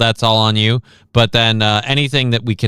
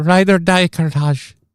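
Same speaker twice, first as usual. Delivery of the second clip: put-on Indian accent, higher; 7 semitones higher than usual. Acting a love scene from the imagined Bollywood-voiced game: put-on Indian accent. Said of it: "again, the voice actors".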